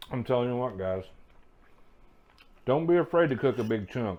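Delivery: speech muffled by a mouthful of food. Cook tasting asparagus and addressing the guys, talking with mouth full. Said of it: "I can't talk with my mouth full".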